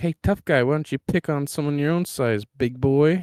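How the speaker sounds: goading, taunting yell, very loud and high. Voicing a character taunting the Minotaur: yelling at the Minotaur. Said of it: "yelling at the Minotaur".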